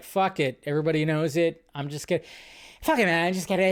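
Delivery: bad rambling voice with you stretched out. Retelling the director's reaction when his script leaked: Tarantino impression. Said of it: "that's my Tarantino impression".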